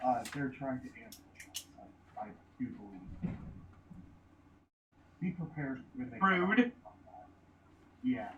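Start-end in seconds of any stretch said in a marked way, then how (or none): 0.0-7.3 hushed whisper, close to the ear. Whispering a warning in another player's ear: whispering. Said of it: "I'm going to whisper in your ear".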